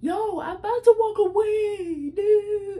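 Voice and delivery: very high, shrill hollering, stretched out. Speaker retells an argument, acting out a woman's words, retelling a yell. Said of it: "She's yelling at".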